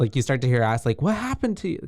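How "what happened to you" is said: acted-out shrill shriek, very high. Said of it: "I think she starts screaming".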